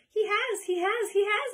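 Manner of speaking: shrill, high, loud, squeaking outburst. Reading a young squirrel's outburst at the table, squeaking. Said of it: "it squeaked".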